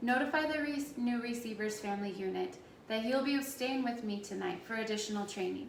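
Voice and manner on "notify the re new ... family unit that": usual speaking voice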